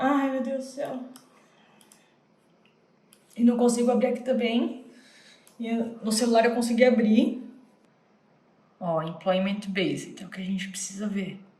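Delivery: nervous and trembling. Checking the Visa Bulletin for their date, the speaker is nervous and trembling. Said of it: "eu tô tremendo".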